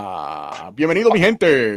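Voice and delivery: low, slow Spanish announcer voice. Opening the show with a Spanish greeting to listeners, in a Spanish announcer voice. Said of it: "my Spanish announcer voice".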